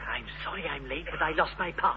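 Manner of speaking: soft hushed whisper. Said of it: "why are you whispering".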